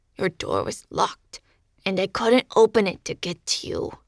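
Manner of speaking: growling, snarling, grumbling tone. Narrator voicing a cat speaking into the narrator's mind, snarled. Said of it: "He snarled the words in my mind as he opened his jaw by increments, ... licking his mouth with an odd quirk to his muzzle".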